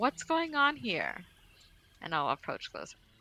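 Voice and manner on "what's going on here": very high, shouted yell. Acting a character approaching a fight and calling out: yelling out. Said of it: "I'm gonna yell out".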